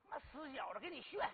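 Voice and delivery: ordinary talk, nothing marked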